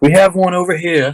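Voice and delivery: high, loud yelled call. Narrating a fight, voicing the attacker's call as he turns: yelling out. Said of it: "he yells out".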